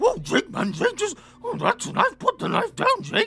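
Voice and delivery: very high, goofy, cheap-sounding cartoon dog voice. Retelling how Doodles reacts to Jake, in a discount Scooby-Doo voice. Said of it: "Why do I sound like discount Scooby Doo doing that?".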